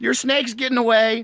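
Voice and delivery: yelling, high pitched.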